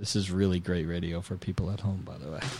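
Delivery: dry sarcasm. Commenting on the interview while writing down answers: sarcastic. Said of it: "I'm being sarcastic".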